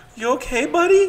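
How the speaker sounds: tiny, angelic, sweet, very high little voice. Retelling a voice he heard in the metro, imitating a little beautiful voice. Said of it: "like a little beautiful voice".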